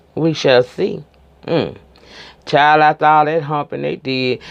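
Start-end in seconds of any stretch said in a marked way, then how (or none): none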